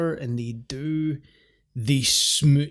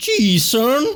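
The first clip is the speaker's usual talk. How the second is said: very high, very loud put-on southern drawl; 10 semitones higher, 9 dB louder than usual. Joking that the film's promoter is a salesman: put-on southern accent. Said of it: "the ten-gallon hat and the southern accent".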